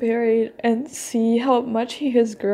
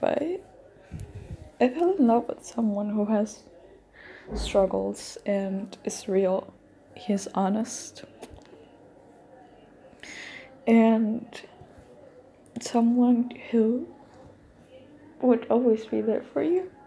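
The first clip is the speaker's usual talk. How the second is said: crying, tearful, quieter; 5 dB quieter than usual. Talking about the person they love and apologizing for it, crying. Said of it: "I'm sorry I'm crying".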